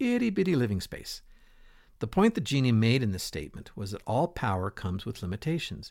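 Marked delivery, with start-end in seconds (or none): 0.0-1.2 high, squeaky, tiny little voice. Retelling the Aladdin genie's speech, the speaker quotes him in the Genie's high squeaky voice. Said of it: "in a high, squeaky voice".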